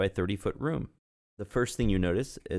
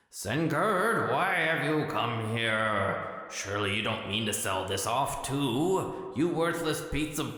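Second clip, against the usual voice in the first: stern, accusing spirit voice, too drawn out; 3 semitones higher than usual. A narrator voices a sudden voice confronting the listener, booming voice. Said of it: "a voice suddenly booms".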